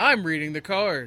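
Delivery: exaggerated emotional put-on delivery. Mocking the actor's line reading, too much emotion. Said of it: "that was too much emotion".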